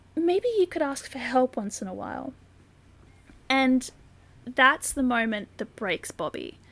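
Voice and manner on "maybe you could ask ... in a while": tiny, small, shrunken-sounding little voice. Recounting a TV episode scene, quoting Buck's reply: little voice. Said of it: "he just says in this little voice".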